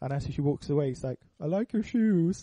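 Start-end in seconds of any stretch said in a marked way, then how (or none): 1.4-2.4 slow, drawn-out, pitched-up fake-drunk drawl. Retelling a film scene where Bruce Wayne meets Mercy: imitating Bruce Wayne faking drunkenness. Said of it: "pretending to be drunk".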